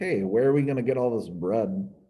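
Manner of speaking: normal talking voice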